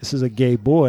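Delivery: ordinary talk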